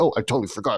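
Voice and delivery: put-on faint hint of British accent. Joking that the writer forgot the character is american: slightly british accent. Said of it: "she says in a slightly British accent".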